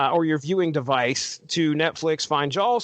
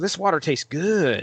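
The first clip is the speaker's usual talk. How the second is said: speaking in a dog voice. Voicing the other speaker's dog drinking from the toilet: speaking as the dog. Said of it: "It's like".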